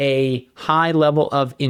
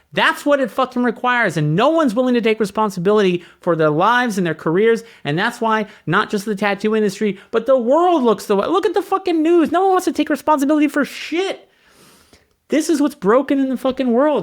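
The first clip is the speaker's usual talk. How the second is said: worked-up, heated tirade, pitched up; 9 semitones higher than usual. A speaker, admitting mid-rant that he is getting heated: getting heated. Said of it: "I know I'm getting heated here".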